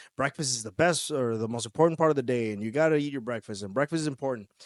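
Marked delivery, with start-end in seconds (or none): none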